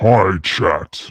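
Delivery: put-on, deep, demon-like voice. Asked to say hi to chat in a deep voice, [name] answers in a deep voice. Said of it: "can you say hi chat in your deep voice".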